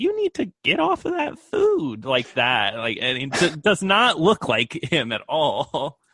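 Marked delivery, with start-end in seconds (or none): 0.0-2.0 very high-pitched, silly, goofy dubbed voice-over voice. Retelling a brothel manager character's line, imitating a goofy dubbed voice. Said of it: "he has like this really goofy voice over him".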